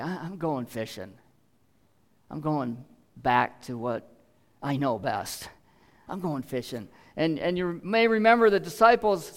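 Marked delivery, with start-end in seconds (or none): 0.0-6.9 sad, sorrowful, grieving, heavy-hearted voice. Speaker retelling Peter's words to his friends after the resurrection: acting out Peter's grief. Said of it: "saying it in a grieving sort of way".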